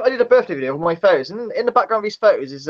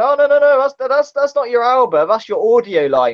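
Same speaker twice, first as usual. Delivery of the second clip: mock chuckling, pitched-up talk through the words; 6 semitones higher, 4 dB louder than usual. Retelling how someone laughed while correcting the speaker: imitating Glenn laughing. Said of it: "Glenn was laughing, going".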